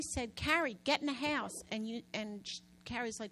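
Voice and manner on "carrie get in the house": hollered, alarmed yell. Retelling a warning to Carrie about a twister: retelling own yell. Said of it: "and I yelled".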